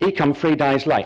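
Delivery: Estuary English accent leaning toward Cockney. Teaching pronunciation, attempting an example sentence in estuary english cockney accent. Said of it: "attempt to pronounce these in estuary English stroke Cockney".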